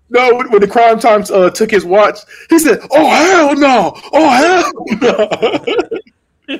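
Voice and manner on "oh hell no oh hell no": put-on angry shouting voice, higher. Retelling a wrestler's reaction when his watch was taken: imitating Booker T getting mad. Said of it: "every time he got mad".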